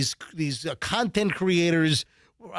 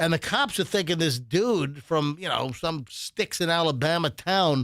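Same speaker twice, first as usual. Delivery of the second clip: usual speaking voice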